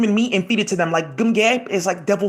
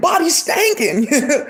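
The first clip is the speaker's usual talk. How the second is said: mock screaming, higher pitch; 3 semitones higher than usual. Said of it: "she kept on screaming".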